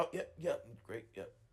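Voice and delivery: flustered, choked-up stammer, words catching in the throat. Retelling a referral coordinator's flustered reply: imitating someone choking up on words. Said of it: "choking up on his words".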